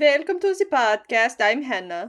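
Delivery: loud Swedish accent all the way through. Podcast host introducing herself at the start of the show, in a Swedish Chef voice. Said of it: "That was Swedish".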